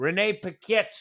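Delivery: Australian-accented pronunciation. Repeating a person's name after a correction: Australian accent. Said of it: "I say her name with, like, a Australian accent".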